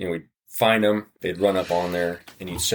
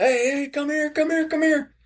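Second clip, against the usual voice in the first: very high, repeated, yelled hollering. Retelling hearing Lawrence chase a baboon: imitating Lawrence hollering. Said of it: "we hear him just hollering and, and yelling".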